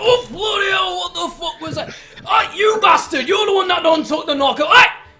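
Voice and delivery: very high, shrill, very loud furious outburst. Voicing Stainless reacting to a loud bell chime: voicing Stainless, angry outburst. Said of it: "And Stainless goes like".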